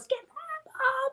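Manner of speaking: shouted, voice shooting up to a high-pitched yell. Retelling her husband yelling at her after she fell: retelling a yell. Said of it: "he's yelling at me".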